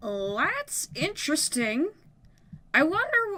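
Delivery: slow, musing speech with voice breaking midway. Speaker musing over a roof design while building it, voice crack. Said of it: "that was quite the voice crack".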